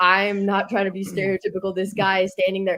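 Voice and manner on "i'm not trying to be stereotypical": ordinary delivery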